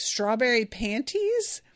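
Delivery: plain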